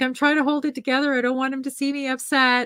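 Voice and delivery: put-on crying voice. Speaker retells Kendall's goodbye at the security gate, imitating Kendall crying. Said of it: "So Kendall starts to cry".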